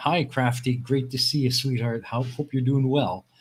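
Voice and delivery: normal talking voice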